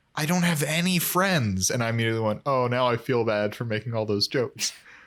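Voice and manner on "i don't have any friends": mock very sad, downcast, pitched-up delivery. Recapping a show episode, imitating Ramona saying it sadly. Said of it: "Ramona very sadly goes".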